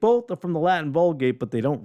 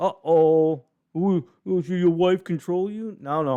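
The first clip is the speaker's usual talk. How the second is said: teasing put-on sarcasm, drawn-out "uh-oh"; 2 semitones higher than usual. Joking about crediting his wife for an idea: joking sarcastic tone. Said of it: "I'm being sarcastic".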